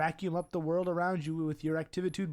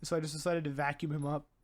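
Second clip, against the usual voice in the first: ordinary delivery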